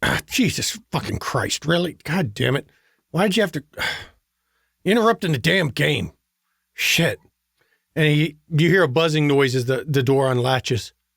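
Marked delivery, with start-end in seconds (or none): 0.0-7.2 rough, gruff male voice. Voicing a man answering an apartment buzzer: gruff man's voice. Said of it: "a gruff man's voice comes over it".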